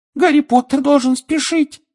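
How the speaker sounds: very high, squeaky elf voice. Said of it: "пискнул Добби".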